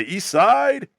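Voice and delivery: put-on East German accent. Joking about an imagined character's line: put-on east german accent. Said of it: "East German accent".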